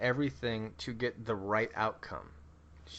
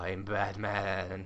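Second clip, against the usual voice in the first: put-on buzzing voice; 2 semitones lower than usual. Joking about how he sounds when he talks, buzzing Batman voice. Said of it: "he's just like, bzzz".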